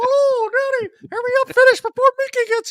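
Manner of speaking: squeaked out, high and loud. Playing along with the group's joke: Mickey Mouse voice. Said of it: "Mickey Mouse voice".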